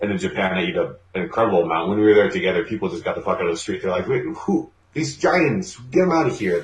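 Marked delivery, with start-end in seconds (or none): 4.1-6.6 grandmother character voice.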